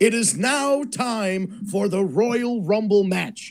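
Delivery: ring-announcer style cadence and announcing delivery. Recalling how Howard Finkel announced the Rumble: Howard Finkel announcing cadence. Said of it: "He had a way of".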